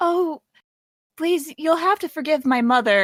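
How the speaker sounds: high-pitched, imploring, begging tone. Voicing Kai, begging Ashu to forgive her mother. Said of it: "Kai will run up to, um, um, Ashu and say".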